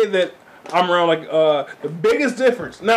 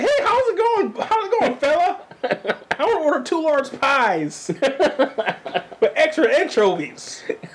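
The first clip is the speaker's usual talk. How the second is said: very high, bright, put-on polite phone voice.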